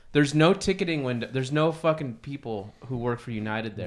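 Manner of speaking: ordinary talk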